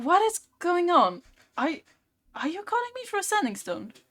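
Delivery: very high, bewildered, confused voice. Voicing the voice everybody hears from the crystal, confused voice. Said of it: "You hear this voice that seems to be confused".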